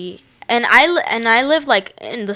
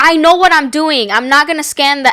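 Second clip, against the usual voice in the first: acted-out furious, angry yelled screaming; 5 semitones higher, 5 dB louder than usual. Retelling how the woman scanning her items screamed at her, retelling someone screaming at her. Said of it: "And she screams at me".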